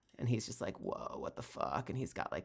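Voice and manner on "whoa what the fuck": put-on slow, breathy, half-whispered stoner dude drawl. Describing a pictured character's words: put-on stoner dude voice. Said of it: "a stoner dude".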